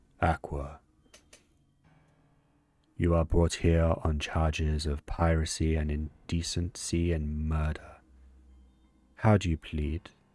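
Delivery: deep, low voice of a presiding judge. Narrating a game scene, the speaker voices a character in a deep booming voice. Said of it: "speaks in a deep, booming voice".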